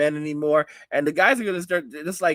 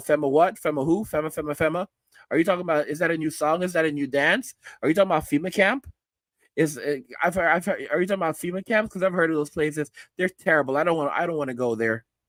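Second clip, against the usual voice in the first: usual speaking voice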